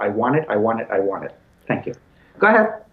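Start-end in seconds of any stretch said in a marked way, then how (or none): none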